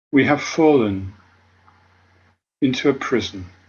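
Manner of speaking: slow delivery with long pauses between phrases.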